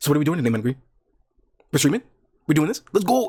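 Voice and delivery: fast, hurried chatter with words tumbling out. Imitating people who copy a streamer's way of talking: fast xQc-style talking. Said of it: "I wanna say very fast".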